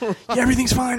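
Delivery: holding back tears. Joking about how to react on camera: mock holding back tears. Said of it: "holding back tears".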